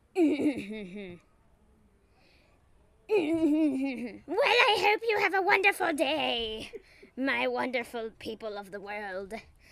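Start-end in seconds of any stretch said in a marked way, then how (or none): 4.3-9.3 evil, creepy jazz voice, high and loud. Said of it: "that is a typical jazz thing going on here".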